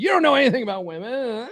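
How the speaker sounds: acted pissed-off snap. Acting out a guy told to read the book: imitating a pissed-off guy. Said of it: "they'll be all fucking pissed off about it".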